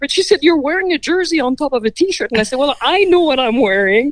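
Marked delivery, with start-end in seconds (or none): 0.4-2.3 playful, teasing tone, higher pitch. Recounting being teased while packing a bag, imitating her teasing. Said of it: "she was teasing".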